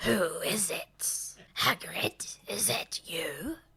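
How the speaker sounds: hoarse, raspy voice, calling out. Narrating a spider cave scene, a hidden voice calls out; raspy voice calling out. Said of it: "A raspy voice calls out".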